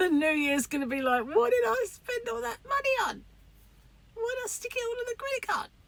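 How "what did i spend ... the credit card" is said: very high, shrill, screechy witch-like screech. The speaker hears their mum's voice coming out of them, screechy witchy voice. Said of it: "my mum's screechy, like witchy poo voice".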